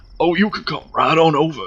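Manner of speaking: stupid, goofy, high-pitched put-on voice. Recreating a phone conversation from a video: imitating his stupid voice. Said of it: "stupid fucking voice he does".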